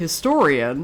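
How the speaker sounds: sarcastic, "historian" said in audible scare quotes. Doubting who a claim originated from, sarcastic historian. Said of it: "I'm putting historian in like one hundred percent necessary scare quotes. Like, can you see me creating those quotes with by the tone of my voice?".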